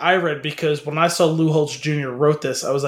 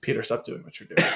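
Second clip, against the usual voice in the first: quick, soft, creaky deadpan, rattled off; 7 dB quieter than usual. Picturing how Joe would say the line, deadpan Patrick Warburton impression. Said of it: "like totally deadpanning?".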